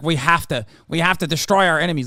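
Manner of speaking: mocking, sneering, slimy nerd voice. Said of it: "slimy little fucking creature nerd being like".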